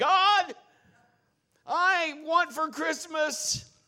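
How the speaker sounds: very loud, very high, drawn-out full-lung holler. Telling a joke about a boy praying while Grandma is upstairs: imitating Tommy shouting. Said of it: "tell his list at the top of his lungs".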